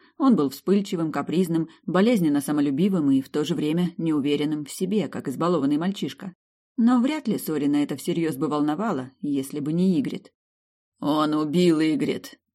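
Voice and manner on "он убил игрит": through gritted teeth, slower. Narrator reads a man's line to the storyteller, said through gritted teeth. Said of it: "процедил он".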